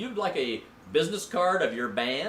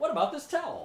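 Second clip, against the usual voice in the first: put-on, pitched-up radio announcer delivery; 9 semitones higher than usual. Offering a towel to mop up spills, in a mock announcer voice. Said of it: "I'm using my announcer voice".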